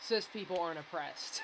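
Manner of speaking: ordinary delivery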